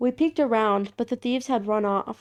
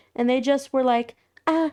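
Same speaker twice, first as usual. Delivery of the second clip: plain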